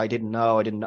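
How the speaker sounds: tearful, crying voice. Acting out a scene where the character learns the truth: imitating someone crying. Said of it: "she's crying".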